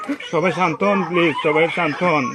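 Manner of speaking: pleading, urging tone.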